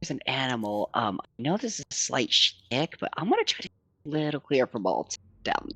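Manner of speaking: quiet, close half-whisper. Half-whispering a warning into another character's ear: half-whispering. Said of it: "I'm gonna whisper into Anna's ear".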